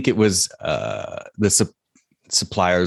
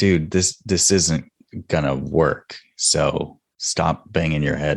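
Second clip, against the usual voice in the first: ordinary talk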